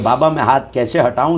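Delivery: plain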